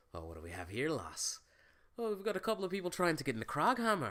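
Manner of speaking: put-on loud, swooping dwarf voice with Irish accent. Retelling a favorite moment from a show, imitating Matthew Mercer's Irish-style dwarf voice. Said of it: "slip into his dwarvish voice, like, his Irish kind of thing".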